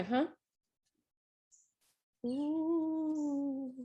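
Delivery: eerie, high-pitched, drawn-out ghostly ooh. Giving advice on painting with a small brush, slipping into a ghostly voice. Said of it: "I sounded like a ghost just then".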